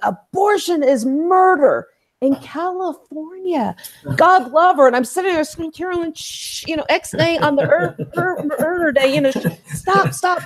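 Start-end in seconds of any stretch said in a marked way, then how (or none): 0.0-3.7 slow, deliberate, put-on proclaiming voice. Recalling a woman on the gym treadmill, the speaker quotes her: imitating a very loud voice. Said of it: "she was in a very loud voice saying".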